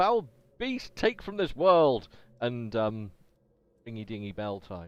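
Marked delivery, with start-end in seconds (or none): 0.0-2.1 yelling in character voice. Turning to face a ghoul bursting through the door: yelling in character. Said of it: "I just yell out".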